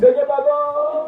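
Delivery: fervent, pleading tone.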